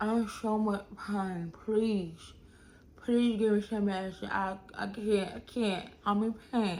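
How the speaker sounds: put-on acted, slurred, pained speech as through swollen mouth. Retelling how they talked in pain with a busted mouth, imitating swollen-mouth speech. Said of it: "I was talking like this".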